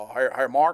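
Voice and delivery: gruff, rough voice. Speaker recalls a phone call from a coach, gruff Mal Moore voice. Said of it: "I just hear this gru- gruffled voice".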